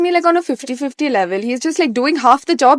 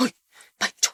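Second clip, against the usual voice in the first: whispered, breathy attempt at a deep voice. Retelling playing a celebrity on a show: Amitabh Bachchan deep voice. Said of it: "now I can't deep voice like him, but I tried my best".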